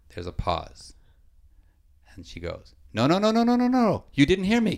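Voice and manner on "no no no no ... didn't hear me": put-on woman's voice, higher and very loud. Retelling a woman heard at three in the morning: imitating her speaking very loudly. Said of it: "Very loudly".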